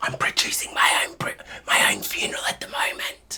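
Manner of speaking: soft, breathy, secretive whisper close to the ear. Retelling what was whispered in a friend's ear at a funeral: retelling a whisper. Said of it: "I whispered in his ear".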